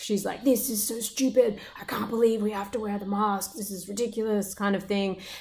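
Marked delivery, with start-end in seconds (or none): 0.4-4.5 put-on angry female voice. Retelling what an angry shopper said about masks: imitating an angry woman. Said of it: "she was angry that she had to wear a mask".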